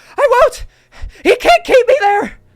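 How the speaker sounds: very high, very loud panicked cry. Playing the mother trying to climb away in a scene: panicking. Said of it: "panicking and trying to climb away".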